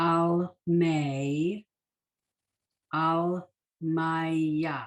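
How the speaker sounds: very slow, careful, deliberate reading, "May" drawn out. Showing learners how to read the prayer words: reading very slowly. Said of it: "Now I'm reading very slowly".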